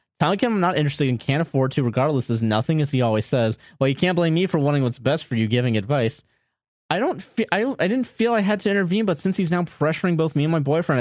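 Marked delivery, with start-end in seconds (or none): none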